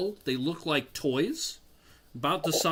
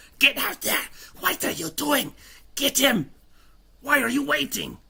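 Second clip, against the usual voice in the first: very high, rough, raspy gremlin-like shouting; 10 semitones higher, 3 dB louder than usual. Voicing a character yelling at others to attack, raspy gremlin-like yelling. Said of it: "His voice, very loud. He's he's yelling".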